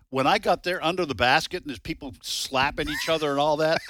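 ordinary talk, nothing marked

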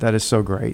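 ordinary talk

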